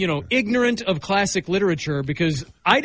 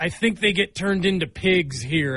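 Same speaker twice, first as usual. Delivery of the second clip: ordinary talk, nothing marked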